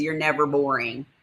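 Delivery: ordinary talk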